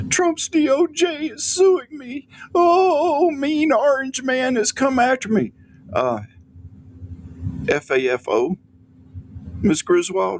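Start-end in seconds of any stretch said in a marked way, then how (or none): 0.1-5.5 very high whiny panic with long drawn-out oh. Mocking a social media post by Griswold, imitating Griswold whining. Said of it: "the panic and the whining in her voice".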